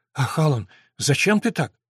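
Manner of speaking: ordinary delivery, nothing marked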